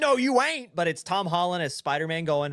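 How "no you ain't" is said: raised-pitch cartoonish voice. Retelling a cartoon scene, quoting the character Sandy: Sandy voice. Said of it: "and Sandy goes".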